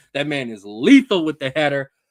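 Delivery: ordinary talk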